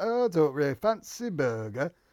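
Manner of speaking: imitated Yorkshire accent. Speaker retells a woman's reply while ordering food, in a yorkshire accent. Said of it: "have a Yorkshire accent".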